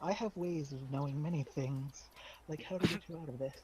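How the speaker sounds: close, hushed, confiding half-whisper. Leaning in close to a nervous boy, half-whispering in character. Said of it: "lean in real close and whisper to him".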